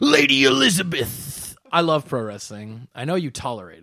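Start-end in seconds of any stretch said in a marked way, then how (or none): 0.0-1.5 very high, raspy wrestler-style voice. Showing how to switch from Hulk Hogan to Macho Man: Macho Man impression. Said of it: "you just gotta talk like this".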